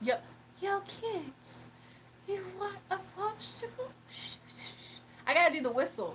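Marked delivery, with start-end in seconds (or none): 0.0-3.9 put-on creepy old-man voice, higher, quieter, slower. Told he could do the Family Guy character, doing a Man Pervert impression. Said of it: "do the impressions of Man Pervert".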